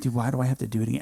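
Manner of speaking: put-on tearful crying voice. Recounting waking up after breaking a leg, speaker reenacts asking the nurse, retelling crying. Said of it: "And I'm crying".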